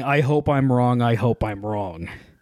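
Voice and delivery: ordinary talk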